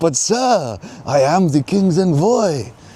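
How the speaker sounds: very high, hammy, bad put-on French accent. Retelling a story, playing the king's envoy answering a man, in a French accent. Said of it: "that's my best French accent".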